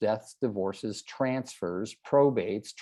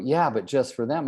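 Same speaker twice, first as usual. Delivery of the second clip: ordinary delivery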